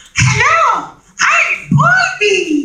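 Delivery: very high, swooping cartoon character voice. Actor showing the voice for a character with big googly eyes, cartoon voice. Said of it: "That's a cartoon voice".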